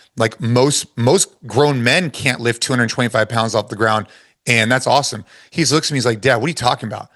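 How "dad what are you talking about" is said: imitated, mock-serious, super serious, faster. A father retells his son's reply after praising his lift: imitating son, super serious. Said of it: "super serious".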